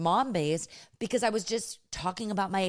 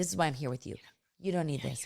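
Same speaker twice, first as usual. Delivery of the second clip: hushed half-whispered aside; 4 semitones lower, 4 dB quieter than usual. Retelling words half-whispered to a friend at a showroom: retelling a half-whisper. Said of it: "I whispered to her".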